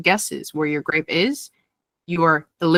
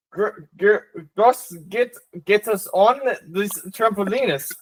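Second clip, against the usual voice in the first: put-on German accent, higher; 3 semitones higher than usual. Answering a prompt to instruct an elephant onto a trampoline: German accent. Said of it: "In a German accent".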